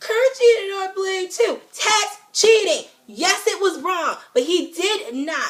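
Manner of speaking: very high, fed-up, frustrated yelling. Complaining about social media comments, the speaker is yelling in frustration. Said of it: "Sorry for yelling".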